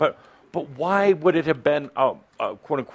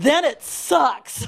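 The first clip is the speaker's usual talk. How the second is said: loud and emphatic, higher; 12 semitones higher than usual. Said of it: "I like you mean it".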